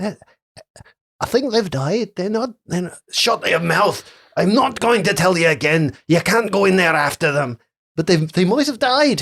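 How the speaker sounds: put-on high-pitched Scouse Liverpool accent. Narrator voices figures the players hear at the temple front, in a Liverpudlian accent.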